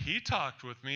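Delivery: ordinary talk, nothing marked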